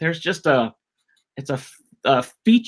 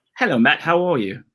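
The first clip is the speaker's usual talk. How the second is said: plain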